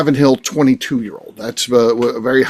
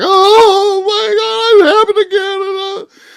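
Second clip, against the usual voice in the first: very high, loud, stretched-out blubbering wail; 5 dB louder than usual. Retelling how a grown man reacted to missing a bottle release: imitating someone wailing. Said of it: "He starts just crying, just wailing, like".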